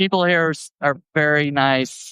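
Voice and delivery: getting emotional, slightly choked up. Thanking the people at Pride Fest: a little choked up. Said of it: "I'm getting a little choked up actually".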